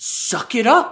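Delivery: mock tough-guy gamer voice, high and slow.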